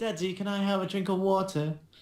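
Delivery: terrible, bad put-on English accent. Taking a turn at accents with the group, in a bad English accent. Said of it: "have the most bad English accent ever".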